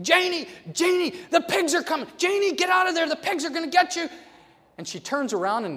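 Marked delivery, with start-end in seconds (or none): 0.0-4.1 very high, loud, shrieking scream. Retelling screaming a warning to a cousin about pigs: imitating screaming. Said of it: "started screaming at Janie".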